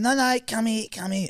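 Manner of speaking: very high, squeaky, put-on street bloke's voice. Retelling a bus encounter, imitating the homeless man's speech. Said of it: "That's how he spoke".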